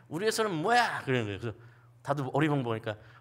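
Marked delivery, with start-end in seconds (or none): 0.1-1.0 put-on, sudden, high, barked drill-instructor shout. Recalling a drill instructor from decades ago; retelling a sudden shout. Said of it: "갑자기 뜬금없이 소리를 지르더라고요".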